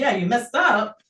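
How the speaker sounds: plain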